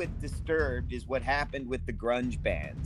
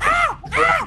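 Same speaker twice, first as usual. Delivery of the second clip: high, loud monkey-noise impression, hooting. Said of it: "I was doing my Disturbed impersonation".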